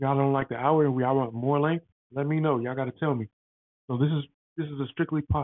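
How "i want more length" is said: usual speaking voice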